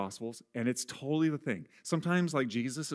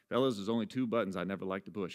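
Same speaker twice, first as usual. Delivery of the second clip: Southern drawl, charming; 4 semitones lower than usual. Quoting a coach from a show about his buttons: Ted Lasso Southern drawl. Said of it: "charming, like, Southern drawl way".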